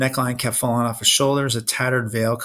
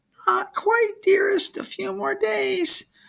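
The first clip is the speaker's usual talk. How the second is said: very high falsetto, sweetly put on. Narrator reading a character calling out to a monster from hiding, in falsetto. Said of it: "He called out in a falsetto".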